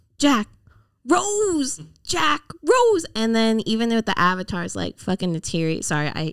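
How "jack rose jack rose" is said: mock very high, slow, drawn-out shrieking. Mocking the Titanic lovers' dialogue: imitating Jack and Rose screaming. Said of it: "just screaming each other's names in Titanic".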